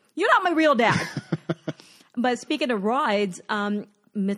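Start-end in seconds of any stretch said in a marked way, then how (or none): 0.2-1.1 loud, high-pitched screamed outburst. Recounting a ride, acting out what they finally screamed at their dad: retelling a scream. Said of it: "I finally screamed".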